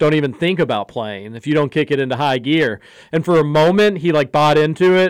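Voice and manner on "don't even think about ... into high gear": plain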